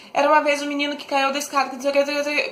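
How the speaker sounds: rushed, monotone run-on reading, no pauses or intonation. Showing reading a story without commas: rushed, no pauses, no intonation. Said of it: "Se a gente lê tudo doido... desembestado, sem pausa, sem entonação".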